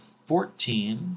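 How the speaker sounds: ordinary delivery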